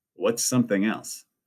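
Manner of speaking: plain reading voice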